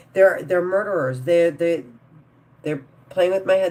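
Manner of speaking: stammering with repeated words. Ranting that they are psychos and murderers: stuttering. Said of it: "That's why I'm stuttering".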